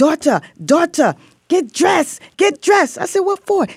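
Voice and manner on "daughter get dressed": put-on heavy, very high Puerto Rican accent. Recounting her prison mom coming to fetch her, imitating Diana Sanchez's thick Puerto Rican accent. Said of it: "thick accent, Puerto Rican accent".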